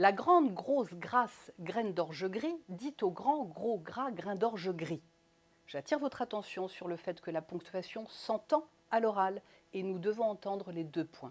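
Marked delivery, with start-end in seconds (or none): 0.0-5.0 slow, carefully spelled-out, articulated tongue twister. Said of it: "les virelangues pour vous chauffer la voix".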